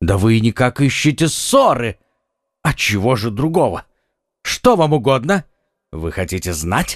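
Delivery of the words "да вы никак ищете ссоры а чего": ordinary delivery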